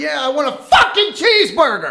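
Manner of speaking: very loud yell pitched very high. Retelling ordering at a drive-through speaker: imitating own loud yell. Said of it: "as loud as I could".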